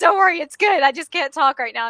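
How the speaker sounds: loud, put-on sobbing through the words. Retelling answering a sister after a happy phone call: imitating own past sobbing. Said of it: "sobbing, crying".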